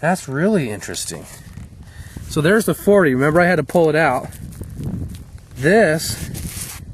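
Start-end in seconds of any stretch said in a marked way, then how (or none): 2.3-6.8 higher, rushed excited blurting. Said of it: "sorry, I'm getting excited again".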